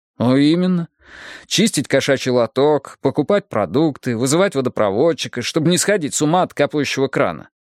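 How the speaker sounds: ordinary delivery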